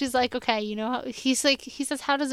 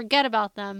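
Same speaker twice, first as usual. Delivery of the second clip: ordinary delivery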